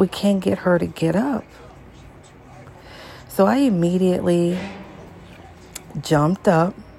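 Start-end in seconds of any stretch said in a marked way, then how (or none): none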